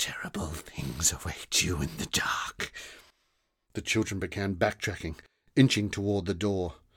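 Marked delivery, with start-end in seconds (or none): 0.0-2.7 menacing, ominous low whisper. Narrator reading a story, a woman looming over two children; whispering. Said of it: "she whispered".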